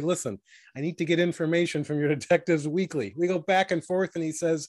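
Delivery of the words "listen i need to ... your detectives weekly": normal talking voice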